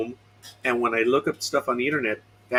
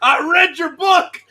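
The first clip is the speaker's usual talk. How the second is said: theatrical, hammy, high, raised and loud character voice; 7 dB louder than usual. Quoting a line from the field of combat, Patton impression. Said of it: "a cheap impression of Patton".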